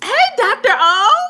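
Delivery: very high, loud, thrilled and gushing voice. Recounting greeting a caller she follows on social media, retelling an excited greeting. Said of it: "I was all excited and stuff".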